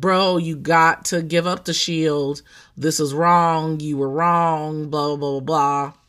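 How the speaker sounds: ordinary delivery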